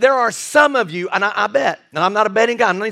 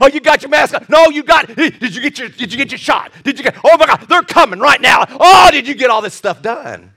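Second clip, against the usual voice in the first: put-on, acted panicking crowd voices; 3 semitones higher, 6 dB louder than usual. Comparing it to COVID, the speaker acts out people in the desert, imitating panicking people. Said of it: "people panicking".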